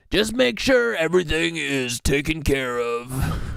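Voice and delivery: put-on Philadelphia accent throughout. Reading a news report aloud, quoting an official's words in a Philly accent. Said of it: "This is my Philly accent".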